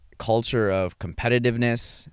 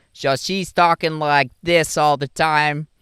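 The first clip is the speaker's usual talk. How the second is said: put-on thick Chicago accent. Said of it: "she had this thick Chicago accent".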